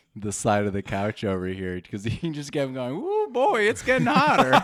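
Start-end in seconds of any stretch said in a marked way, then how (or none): 3.0-4.6 put-on very high, loud Southern accent. Teasing someone about how they regressed as it was hitting them, do a Southern Taylor voice. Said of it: "regressed into Southern Taylor".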